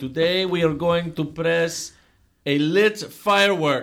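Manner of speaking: put-on stock Russian accent. Describing the gentleman on the HPC channel, speaker quotes him: stereotypical Russian accent. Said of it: "stereotypical Russian accent".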